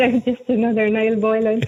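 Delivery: ordinary delivery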